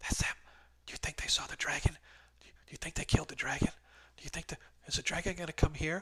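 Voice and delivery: breathy, hushed whispering. Voicing townsfolk as the players enter the store: townsfolk whispering. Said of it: "you can hear people whispering".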